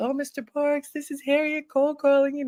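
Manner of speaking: nervous, polite speech, high-pitched. Retelling her nervous scheduled call to mr. parks, retelling her own high-pitched voice. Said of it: "My voice had to be so high pitched".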